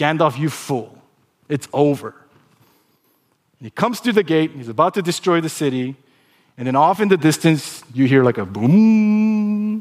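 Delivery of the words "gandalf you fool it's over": put-on scornful villain voice. Retelling a film scene, quoting the Demon King: imitating a scoffing Demon King.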